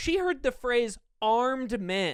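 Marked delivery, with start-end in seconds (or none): none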